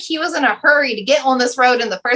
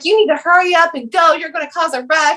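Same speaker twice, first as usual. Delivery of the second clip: put-on screaming, yelling voice; 4 semitones higher than usual. Retelling a driver who stopped to yell at the speaker, retelling a man screaming. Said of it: "And he's screaming".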